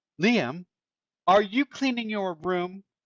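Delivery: suspicious call. Narrating a story, Mom calls through the door to Liam: calling in suspiciously. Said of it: "Mom nearly fainted, / and she lost her footing on the chair. / Mom nearly fainted".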